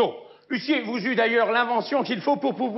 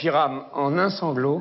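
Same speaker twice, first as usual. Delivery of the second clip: ordinary talk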